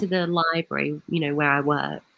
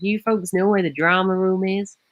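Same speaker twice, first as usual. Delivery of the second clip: put-on American accent. Retelling how a man asked where the drama room was, imitating his American accent. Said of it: "That's how he sounded".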